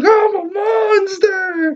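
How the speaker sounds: very high, drawn-out, freaked-out cry. Retelling a show scene where Buster is startled: imitating Buster freaking out. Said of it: "Buster starts freaking out".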